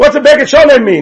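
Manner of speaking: loud shouting, pitched high. Asking a question again over noise from another room: shouting louder. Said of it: "I have to shout louder than that".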